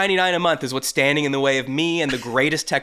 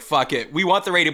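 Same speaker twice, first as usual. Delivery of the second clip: ordinary talk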